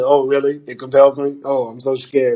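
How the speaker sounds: cheeky, sassy, scoffing tone. Retelling a film exorcism scene where the demon mocks it: imitating the sassy Jonah Hill demon. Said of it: "being all sassy".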